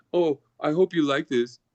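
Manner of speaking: ordinary talk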